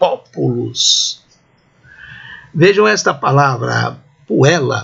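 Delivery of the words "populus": populus with stress on the first syllable po. Teaching how populus is pronounced, stress on first syllable po. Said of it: "Como se houvesse um acento agudo no O".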